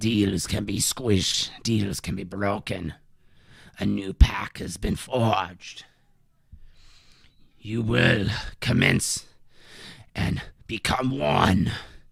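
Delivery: put-on voice gurgling through each word. A game master voices a pulsating blade speaking to a player: gurgling voice. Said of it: "gurgling voice coming through".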